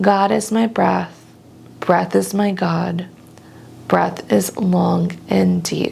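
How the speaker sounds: usual speaking voice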